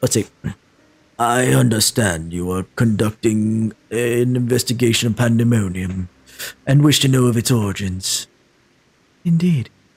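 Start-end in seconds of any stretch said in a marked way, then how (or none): 1.2-9.7 put-on deep, low character voice. Voicing a character's line after picking a voice: put-on deep voice. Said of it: "I'm going to go with a deep voice".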